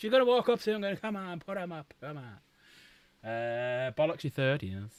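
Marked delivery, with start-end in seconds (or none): 1.0-3.3 very slow, drawn-out put-on Irish accent. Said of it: "Don't know why she's suddenly become Irish".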